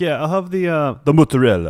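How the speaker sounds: fake Italian accent on mozzarella. Imitating friends ordering at an italian restaurant: imitating a faux-italian pronunciation. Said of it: "two percent Italian in them, and they, like, go to an Italian restaurant".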